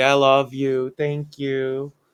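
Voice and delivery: sweet, cute voice, fawning and sucking up. Retelling how a child sucks up to his mom: imitating Eddie's cute voice. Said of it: "Eddie always does the cute voice".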